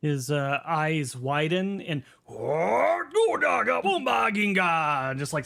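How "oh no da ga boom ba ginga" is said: loud, high swooping yelled gibberish, "oh" dragged out. Voicing a ruler told of a poison plot: yelling loudly. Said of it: "starts slamming his fists and yelling, like, loudly".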